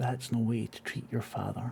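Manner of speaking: voiceless, hushed whisper. Game master voicing an unseen presence behind the players, whisper. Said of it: "And you hear a whisper".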